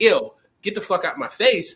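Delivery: plain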